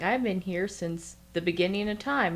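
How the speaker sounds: ordinary delivery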